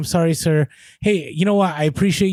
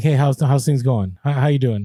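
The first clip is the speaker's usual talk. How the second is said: put-on late-night radio DJ voice, much lower; 3 semitones lower than usual. Acting out chatting with an eBay rep, in a late-night DJ voice. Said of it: "I'll put my you know late night D J voice".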